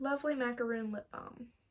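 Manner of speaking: ordinary delivery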